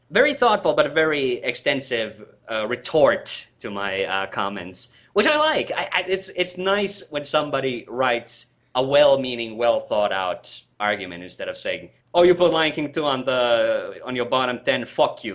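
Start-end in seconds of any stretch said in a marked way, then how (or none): 12.2-15.4 put-on Brooklyn New York accent. Imitating a rude commenter, Brooklyn accent. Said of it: "they're all got Brooklyn accents now?".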